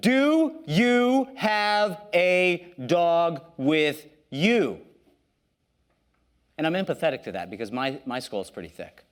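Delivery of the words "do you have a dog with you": put-on very slow, deliberate, raised plain speech. Retelling asking a third time in simple english: imitating own even louder question. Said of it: "I elevate my voice even further".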